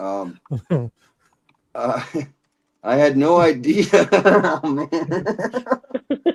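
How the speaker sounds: very slow, cracking up laughing mid-line. Speaker trying to read a text aloud to co-hosts without laughing: laughing while talking. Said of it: "I'm gonna try to read this without laughing".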